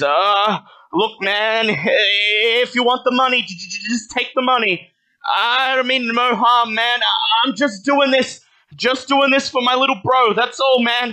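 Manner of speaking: very high, loud, faltering stammer, drawn-out "if". Game master voices a man held at switchblade point by a player, stammering. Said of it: "His mouth stammers".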